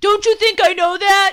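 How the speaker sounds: shrill, very high, full-volume shouting outburst. Narrator voicing a character replying to his brother, shouting. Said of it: "Glum shouted".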